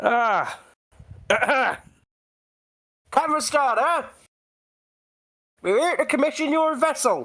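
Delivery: high, hailing shout projected upward. Calling up to a captain on a ship: shouting up to the ship. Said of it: "I'll shout up and go".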